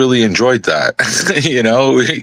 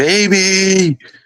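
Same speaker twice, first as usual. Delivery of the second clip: put-on high, long, stretched-out yelling cry; 8 semitones higher than usual. Retelling finding the dead bird and calling for his partner: imitating own yell. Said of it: "And I yelled".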